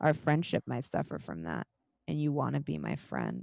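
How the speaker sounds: low, menacing, intimidating voice with veiled threat. Voicing a character who locks eyes and steps closer: intimidating character voice. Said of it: "she looks at you and she says".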